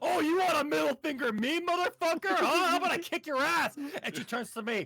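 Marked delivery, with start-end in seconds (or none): 0.0-3.8 very loud, shrill, furious screaming fit. Retelling how mom screamed out the window at a driver, imitating mom screaming. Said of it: "starts screaming at the fucking guy".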